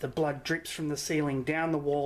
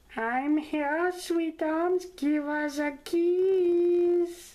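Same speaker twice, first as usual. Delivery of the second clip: put-on sweet little old granny voice, much higher, louder; 13 semitones higher, 4 dB louder than usual. Narrating a game, voicing the caller on a ringing phone: sweet little granny voice. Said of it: "A sweet little granny voice says".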